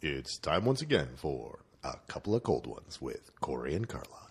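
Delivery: very deep, smooth, polished radio announcer voice. Opening the show with its title: professional announcer voice. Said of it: "You sound really professional this week".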